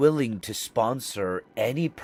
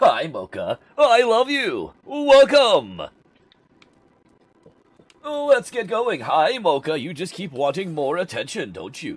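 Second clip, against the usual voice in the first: goofy, loud, high-pitched put-on silly voice; 7 semitones higher, 6 dB louder than usual. Continuing Digimon in a voice a buddy requested: silly put-on voice. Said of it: "requested silly voice, so let's continue on with Digimon in this voice".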